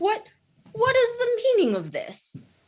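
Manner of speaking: cheerful hearty voice. Voicing a newcomer who finds the elves thawed out: jolly voice. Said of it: "a jolly voice".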